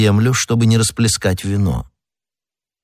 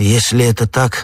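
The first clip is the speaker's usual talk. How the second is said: ordinary delivery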